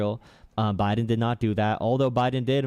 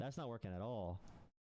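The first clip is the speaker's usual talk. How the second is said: ordinary delivery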